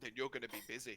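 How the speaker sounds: utterly indifferent, careless, throwaway tone. Answering a shaken barkeep in character at a bar: not caring at all. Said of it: "no fucks given".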